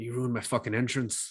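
questionable, angry put-on Australian accent. Quoting an angry character from a film scene: put-on Australian accent. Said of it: "Was that supposed to be an Australian accent?".

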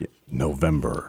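very low, deep, official, authoritative announcer voice. Between high school football scores, announcing the month; official announcer voice. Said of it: "I had to do that in like an official voice".

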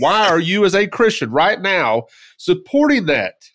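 all-out high-pitched screaming. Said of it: "I'm screaming in my microphone right now".

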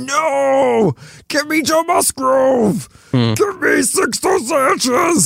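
very high, slow, drawn-out monster voice, no stretched. Speaker describing trying to suppress his inner Hulk: Hulk voice. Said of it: "I'm gonna stop doing that voice now".

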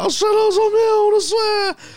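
put-on drunk crying. Retelling pleading with police while drunk: imitating drunk crying. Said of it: "I'm just pissed and crying".

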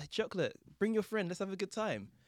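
very high-pitched hollering shout. Retelling how a woman at a window called out: imitating a woman shouting. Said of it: "she shouted out".

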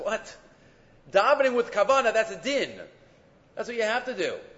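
high-pitched, disbelieving voice.

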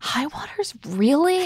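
high, really let-down, disappointed tone. Acting out Jordan's reaction as he looks at the guy, imitating a really disappointed-sounding voice. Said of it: "In this really disappointed sounding voice".

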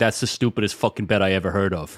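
heavy glottal pressure built up, then let out. Attempting a long-practiced line reading: Mike Francesa voice. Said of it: "Mike Francesa saying".

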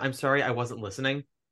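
usual speaking voice

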